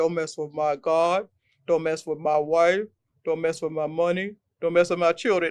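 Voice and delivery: deep, low commercial-style dad voice. Quoting what their father used to say, imitating dad's deep voice. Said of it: "he had a deep like a Kellogg's cornflake voice".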